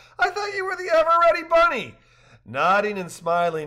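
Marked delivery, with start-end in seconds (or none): 0.2-2.0 laughing outburst, pitched way up high. Narrator reading a woman's reply to a man who says he is tired, exclaiming with a laugh. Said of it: "Rachel exclaimed with a laugh".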